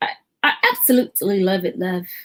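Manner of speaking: slow, sing-song British accent, not quite nailed. Speaker trying out the British accent they have been practising, attempted British accent. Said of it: "I've been working on my British accent".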